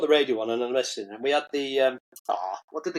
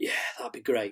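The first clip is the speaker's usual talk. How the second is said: put-on whisper, quieter; 6 dB quieter than usual. Retelling his mate's reply when offered a cab, imitating Smudge's whisper. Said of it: "he started doing the whispering thing".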